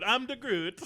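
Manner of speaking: put-on loud, high Italian accent, belted out. Joking about a lawyer's name, doing an Italian Groot voice: Italian Groot voice. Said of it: "this is Italian Groot".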